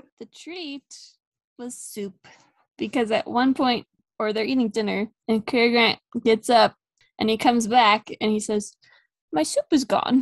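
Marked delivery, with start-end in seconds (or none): 9.3-10.2 put-on utterly forlorn, heartbroken, mournful voice. Retelling a film scene where a character finds his soup gone, mock-sad Cary Grant line. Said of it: "And like the saddest voice".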